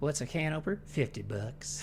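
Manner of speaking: very soft, barely audible androgynous character voice. Asked if they're doing Baked Beans, the speaker answers in Baked Beans voice. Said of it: "Baked Beans' voice".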